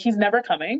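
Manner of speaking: plain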